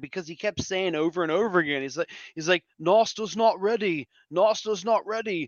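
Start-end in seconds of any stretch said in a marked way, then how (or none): 2.8-5.5 bad put-on British accent. Quoting a guy who kept repeating himself, in bad British accent. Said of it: "that's my bad British accent".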